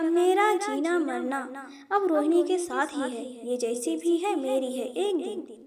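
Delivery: ordinary delivery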